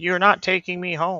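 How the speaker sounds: woman crying out, strained and resisting. Voicing a woman who refuses to be taken home: woman screaming. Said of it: "You hear the woman screaming".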